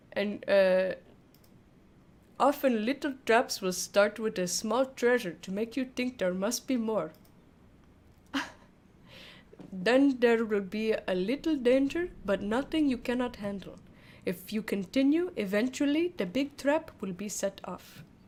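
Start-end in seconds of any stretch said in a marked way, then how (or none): 2.4-18.0 poorly put-on Indian accent. Reading lines after a wheel picks the accent: bad Indian accent. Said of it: "I must do an Indian accent".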